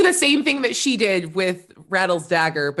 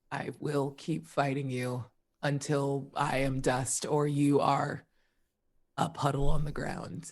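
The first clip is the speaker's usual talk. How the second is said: growling, low and quiet; 4 semitones lower, 8 dB quieter than usual. On her turn in the fight, Bursa growls at her opponent, growling. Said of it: "Bursa just growls like".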